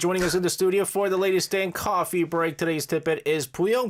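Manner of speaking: broadcast-style sports announcer play-by-play voice. Host introducing today's guest in the studio, sports announcer voice. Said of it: "I did my sports announcer voice by mistake".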